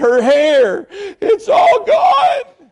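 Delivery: put-on very high, very slow, tearful, drawn-out bawling. Retelling her words about a girl's lost hair, imitating someone bawling. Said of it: "she was bawling, crying".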